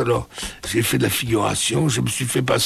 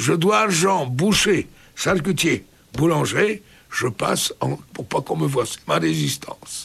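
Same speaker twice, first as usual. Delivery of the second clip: French spoken with a put-on Russian accent; 3 semitones higher than usual. Speaker quotes their father's reply about his resistance: Russian accent. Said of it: "avec accent russe".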